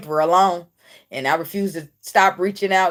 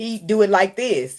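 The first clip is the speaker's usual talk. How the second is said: ordinary delivery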